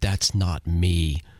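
slow, drawn-out voice sounding over a radio. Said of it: "we hear [name]'s voice go".

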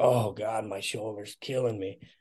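pained groaning. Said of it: "grunting and moaning. He's like".

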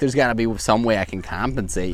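usual speaking voice

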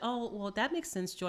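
ordinary talk

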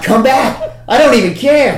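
high, loud, fired-up taunting shout.

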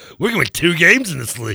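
proud, chest-out bragging with strong emphasis. Imitating the other speaker's claim with chest pumped: imitating proud boasting. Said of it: "your chest pumped proudly".

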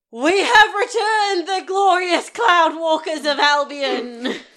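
loud shouting. Kicking open a door as a character and announcing the party: yelling a proclamation. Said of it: "I kick open the door and yell".

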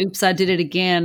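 ordinary talk

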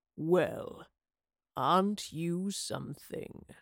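low, deep, soft purring voice. A man emerging from a portal addresses someone in the glade: deep purring voice. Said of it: "he purred in a deep voice".

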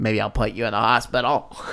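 put-on low, old-movie style voice. Recapping the story and voicing Jacob as he turns wolf-like, Jacob impression. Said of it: "I love your impersonation of Jacob".

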